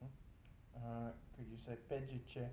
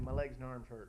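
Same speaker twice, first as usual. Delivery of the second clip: normal talking voice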